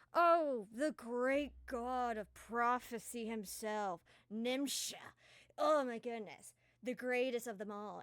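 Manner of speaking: loud, dripping, heavily sarcastic gushing tone. A player character answers who their father is, heavily sarcastic mock praise. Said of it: "being heavily sarcastic as they're waving".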